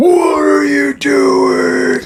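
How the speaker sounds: shrill, very high screaming yell. Retelling how a DEA agent came out at them at night: retelling someone screaming. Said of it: "Like screaming at us".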